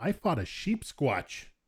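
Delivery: proud, pleased, boastful delivery. Telling the others about a fight in a game: proudly. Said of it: "You said it so proudly".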